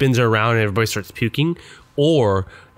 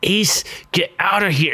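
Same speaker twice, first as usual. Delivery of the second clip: higher-pitched words squeezed through clenched teeth; 7 semitones higher than usual. Imitating an actress's line from the movie: Sean Young talking through her teeth. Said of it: "trying to talk through her teeth".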